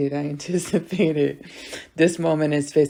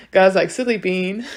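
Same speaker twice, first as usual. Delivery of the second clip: ordinary talk, nothing marked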